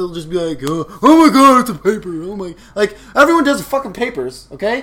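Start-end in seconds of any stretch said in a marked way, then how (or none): 0.7-2.5 whiny, loud, exasperated groaning moan. Imitating classmates complaining to the teacher: imitating classmates moaning. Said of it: "Nobody thinks you're funny for moaning out loud".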